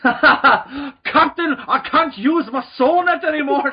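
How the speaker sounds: slow, high, loud put-on Scottish accent. Playing a hunter in the scene, speaking to the captain: put-on Scottish accent. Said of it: "So now they're Scottish".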